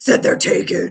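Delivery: sinister, deep demonic voice, dropped low. Speaker imagines a fellow player interrupting at the table, imitating Leah's deep demon voice. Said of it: "like a deep demon voice where she's like".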